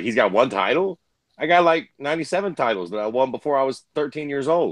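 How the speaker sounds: normal talking voice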